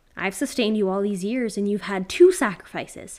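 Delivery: very loud yelling, trembling and shaking with fear. Narrating a story, Jeb yells up at the creature blocking his path: yelling. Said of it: "he yelled up at the creature".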